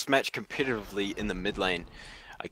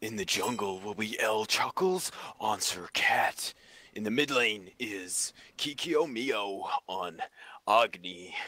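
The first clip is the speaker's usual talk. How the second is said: American accent, put on for show. Announcing the teams before a match: put-on American accent. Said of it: "I really want to do my American voice for this".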